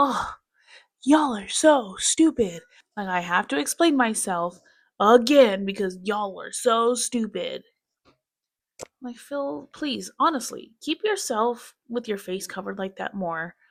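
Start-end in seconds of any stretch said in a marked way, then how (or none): 0.0-7.6 mock mean, ridiculing mimicry. Mocking how the other player explains himself: mocking imitation of Phil. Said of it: "I hate it when he does that. He's like".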